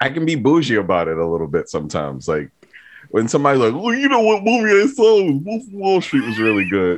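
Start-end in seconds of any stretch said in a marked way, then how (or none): 3.8-7.0 higher, grating, tiresome, annoying voice. Mocking how some friends talk about movies: imitating an annoying friend. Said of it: "It was a weirdly perfect impression".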